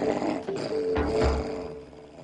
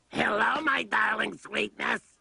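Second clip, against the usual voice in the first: strange put-on old woman voice; 14 semitones higher than usual. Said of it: "what a strange voice you have".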